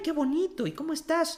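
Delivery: put-on high-pitched feminine voice. Describing how women talk, imitating a high-pitched feminine voice. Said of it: "es todo mucho más agudo".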